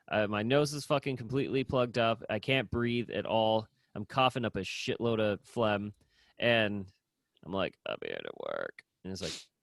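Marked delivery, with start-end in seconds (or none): 7.8-8.8 put-on gravelly, dry, hoarse voice, lower and quieter. Retelling showing up at work while sick: imitating own gravelly dry sick voice. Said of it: "I've got that fucking gravelly, dry voice".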